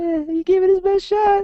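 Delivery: very high, goofy, silly put-on voice. Imagining a statue's words spoken aloud, in a silly wiener voice. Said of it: "with my wiener voice coming out".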